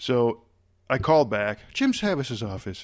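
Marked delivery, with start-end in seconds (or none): 1.7-2.8 put-on speaking with Irish accent. Retelling a phone call to an assistant: imitating Peggy Medina's Irish accent. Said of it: "has a, an Irish accent".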